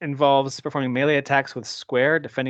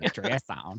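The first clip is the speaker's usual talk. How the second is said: put-on creepy old man voice, lower and quieter; 3 semitones lower, 9 dB quieter than usual. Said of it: "saying it like the old perv guy from Family Guy".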